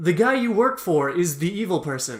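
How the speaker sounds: mock dry, matter-of-fact deadpan delivery. Speaker quotes a movie character's line to a listener, quoting it deadpan.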